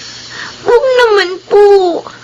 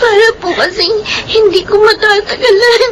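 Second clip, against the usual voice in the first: put-on crying, weeping child voice. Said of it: "huwag ka na umiyak".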